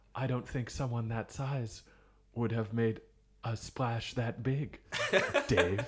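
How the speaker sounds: put-on sci-fi spaceship computer voice. Doing an impression of Shallow Hal 9000: HAL 9000 impression. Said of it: "Here's my impression of Shallow Hal 9000".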